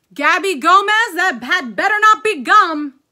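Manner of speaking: very loud, high, suspicious scolding voice. Reading a story aloud, voicing Mrs. Gomez calling to her daughter Gabby: calling out. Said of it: "Gomez called out".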